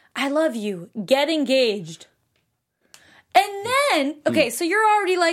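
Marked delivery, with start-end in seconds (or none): 0.2-2.1 mock whisper, put-on. Recapping a series, the speaker quotes what she said in Cassie's ear: retelling a whisper. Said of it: "she then whispered in Cassie's ear".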